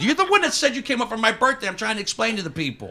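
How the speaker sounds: high, loud, exasperated yelling.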